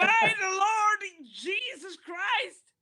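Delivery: acted high, loud scream. Voicing a character rushing into a church and seeing a ritual: screaming in character. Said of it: "He screams".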